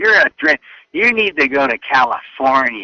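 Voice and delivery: nasty, dismissive, mean, mocking taunt. Retelling what family and friends told him as a kid: imitating people saying it meanly. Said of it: "they said that in a very mean way".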